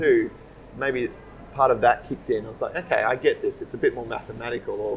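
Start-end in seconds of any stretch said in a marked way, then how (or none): none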